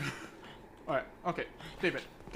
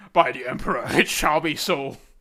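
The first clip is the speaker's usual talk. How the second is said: very loud, slow, weighty, booming warrior voice; 9 dB louder than usual. Checking whether they have one, the speaker does their Space Marine voice. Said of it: "this is my Space Marine voice".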